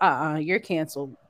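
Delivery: normal talking voice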